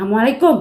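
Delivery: cross, loud, angry outburst at very high pitch. Retelling how Misti gave a greeting while upset, mock-angry, very high. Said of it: "mengucapkan salam dengan nada yang sangat tinggi".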